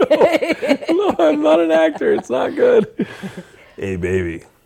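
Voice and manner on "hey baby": deep, very low acted voice. Reading a line for a joking audition, in a low voice. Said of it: "why is your voice getting so low?".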